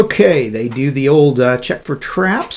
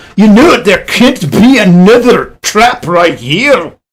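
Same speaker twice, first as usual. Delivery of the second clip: put-on high, loud orc voice in a dumb Scottish accent; 6 semitones higher, 7 dB louder than usual. Narrating a tabletop game, voicing an orc before another trap, dumb scottish accent. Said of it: "why do they always talk with dumb Scottish accents?".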